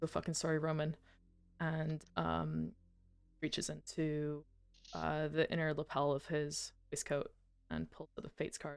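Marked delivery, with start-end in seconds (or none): 0.0-1.0 inward, private aside said to oneself. Voicing a character alone with his thoughts: saying quietly to himself. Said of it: "he kinda says quietly to himself".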